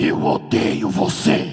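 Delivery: very deep, very loud booming delivery. Retelling a girl speaking during prayer, imitating Cid Moreira's voice. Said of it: "falou com a voz do Cid Moreira assim".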